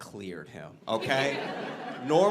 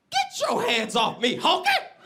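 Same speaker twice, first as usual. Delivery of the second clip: put-on high, loud, swooping old man voice; 6 dB louder than usual. Retelling what an old blind man said after the speaker collided with him, imitating an old blind man.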